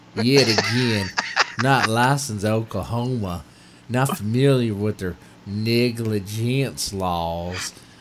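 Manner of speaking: heavy, exaggerated put-on southern drawl, very slow. Reading a paragraph aloud for fun: most southern voice possible. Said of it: "read the next paragraph in the most southern voice possible".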